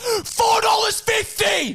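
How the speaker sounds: shouting. Complaining to another speaker about shop snack prices, yelling. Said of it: "Sorry for yelling".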